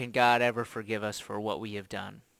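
ordinary talk

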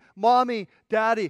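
put-on children's screams. Describing parents being taken from their kids, imitating children screaming.

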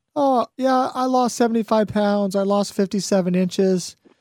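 mock easy, casual, breezy, offhand throwaway delivery. Repeating back what a listener just said, mimicking an offhand, easy tone. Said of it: "look how easily you just said what you said".

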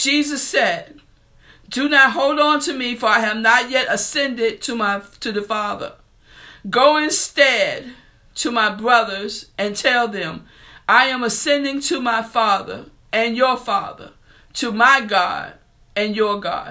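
voice strained, fighting back emotion.

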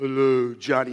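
voice dropped to its deepest register. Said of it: "that real deep voice".

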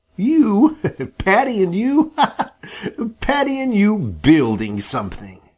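laughing while speaking. Jerry replies to Sammy's boast, laughing as he speaks. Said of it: "Jerry laughed".

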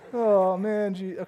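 unsure, insecure, put-on angel voice. Retelling a bible story, the speaker voices the angel: insecure angel voice. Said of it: "That was my angel voice".

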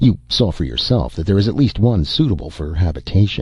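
usual speaking voice

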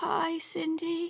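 feeble, very quiet, weak, high voice. Grandma, in the hospital, answers Cindy on the phone, weakly. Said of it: "she said weakly".

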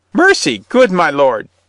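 high, loud, teeth-chattering pleading. The crone, falling on her knees before the bishop, chattering. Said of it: "chattered the crone, falling on her knees".

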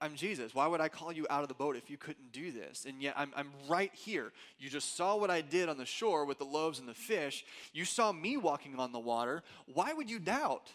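fed-up, annoyed, exasperated scolding tone. Describing how he used to read Jesus's line to the doubter, voicing mock-annoyed Jesus. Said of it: "I used to read that as kind of annoyed Jesus".

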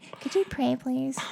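put-on nagging tone. One host asks the other host to pray: mock nagging voice. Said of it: "If you did it in that voice".

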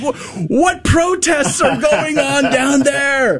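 high, slow, bewildered shout.

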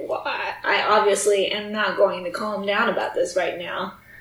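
usual speaking voice

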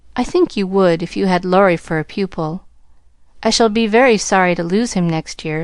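ordinary talk

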